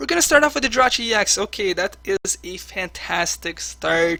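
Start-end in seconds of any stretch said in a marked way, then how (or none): 1.4-4.2 slow, heavily sarcastic tone. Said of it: "Of course, I'm being sarcastic".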